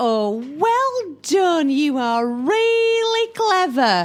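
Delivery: mocking, sarcastic delivery. At a club meeting, a student of advanced sarcasm replies, sarcastic. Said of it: "I'm taking advanced sarcasm".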